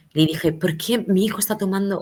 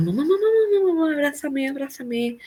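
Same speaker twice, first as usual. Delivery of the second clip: high, terrified, acted child's sobbing with dread; 8 semitones higher than usual. A mother retelling her son's crying after being put to bed: imitating Martín's terrified crying. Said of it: "Llanto de miedo, de terror".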